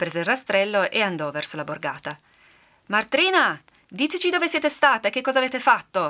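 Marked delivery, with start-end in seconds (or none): 2.9-6.1 raised, pressing, insistent voice, pitched up. A man insists again as the woman ignores him, in a louder voice. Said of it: "insistette l'uomo a voce più alta".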